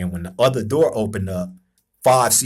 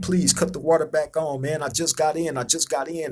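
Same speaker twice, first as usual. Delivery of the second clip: loud, high-pitched screaming; 6 semitones higher, 3 dB quieter than usual. Retelling a shower story, imitating own past screaming. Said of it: "So I'm screaming".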